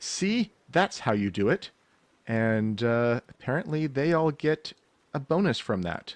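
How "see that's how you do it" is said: high, raised, rallying shout. Voicing an enemy calling to all his allies after his attack, shouting out to allies. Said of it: "he kind of shouts out to all of his allies".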